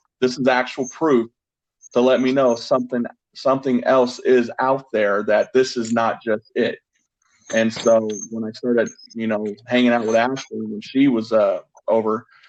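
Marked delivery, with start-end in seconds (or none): none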